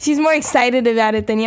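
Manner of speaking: ordinary delivery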